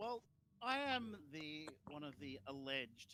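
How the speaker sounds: heavy, drawn-out, swooping, laid-on-thick sarcasm. Voicing a character answering guards in a throne room: very heavy sarcasm. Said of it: "I use very heavy sarcasm".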